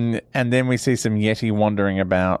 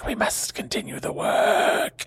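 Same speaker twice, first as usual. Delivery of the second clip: full whisper, hushed, airy and breathy; 12 semitones higher, 4 dB quieter than usual. Retelling a scene, speaking as the master Padmasambhava in a whispery voice. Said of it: "it's whispery voice time".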